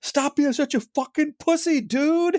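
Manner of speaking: play-acted, shrill, very high yelling. Retelling how his wife yelled at the tv: retelling a yell. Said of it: "My wife is yelling like".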